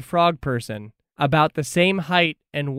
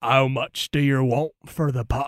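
put-on frog-like pirate character voice; 3 semitones lower than usual. Voicing a bullywug asking a player a price: bullywug pirate voice. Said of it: "one of them looks at you and goes".

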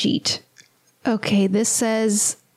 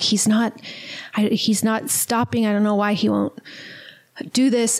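put-on scared, frightened voice. Retelling a scene, quoting a character who seems scared: imitating a scared voice. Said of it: "she's seeming kinda scared, like".

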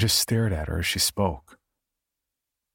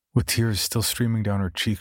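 usual speaking voice

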